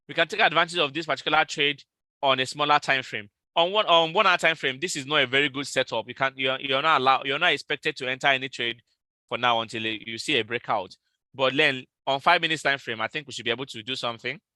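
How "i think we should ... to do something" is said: very fast, quick, rushed talking. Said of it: "I am talking so fast".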